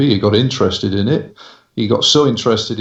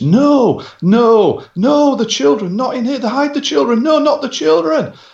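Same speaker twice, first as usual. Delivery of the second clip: very high, shrill, put-on, top-of-the-lungs screaming. Telling of a man who suddenly started screaming, imitating him screaming at the top of his voice. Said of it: "scream at the top of his voice".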